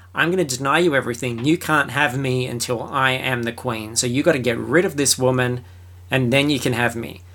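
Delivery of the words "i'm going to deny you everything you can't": usual speaking voice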